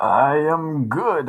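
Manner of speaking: put-on Canadian accent. Podcast co-host answers the host's greeting in the Wolverpool voice. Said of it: "that's my Wolverpool voice".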